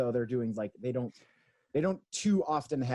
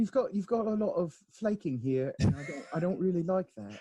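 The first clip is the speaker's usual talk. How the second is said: higher British baking-judge voice, critiquing tone; 7 semitones higher than usual. Describing a British baking show to a co-host, Paul Hollywood impression. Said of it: "baking British baking show style".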